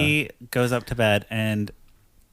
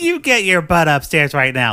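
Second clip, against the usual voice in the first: put-on scolding voice, higher and louder; 5 semitones higher, 7 dB louder than usual. Retelling a scene where Mima catches the couple: imitating Mima scolding like a mom. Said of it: "the mom, like, doing the thing".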